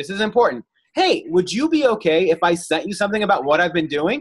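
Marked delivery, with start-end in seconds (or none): 0.9-4.2 bright, upbeat upward lift on "doing". Speaker demonstrates a tone change to a group; upbeat rising tone. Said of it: "You see how I up note there?".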